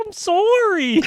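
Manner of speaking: voice cracking, very high. Retelling an apology after stepping on a head: imitating own voice cracking. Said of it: "My voice, like, cracked while I was saying it".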